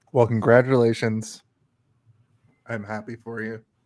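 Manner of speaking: fake begrudging delivery. Congratulating another speaker on a new game: mock jealous congratulations. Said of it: "Why do you sound like you're jealous?".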